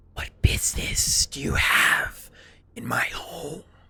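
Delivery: loud, breathy, whispered, ghostly creature voice. Game narrator voices the hooded figure addressing two players, voicing the hooded creature. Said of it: "As he speaks up to you".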